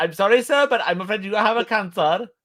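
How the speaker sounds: attempted Indian accent. Asked by the other speaker if he can do one, an attempted Indian accent. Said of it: "I can't do a good Indian accent. Can you?".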